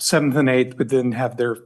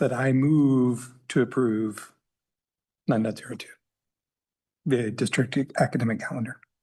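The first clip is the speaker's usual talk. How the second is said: very slow, deliberate, drawn-out delivery; 4 dB quieter than usual. At a meeting, moving to approve an agenda item, very slow. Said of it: "I will say it very slowly".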